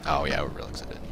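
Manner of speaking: low, hushed sarcastic whisper.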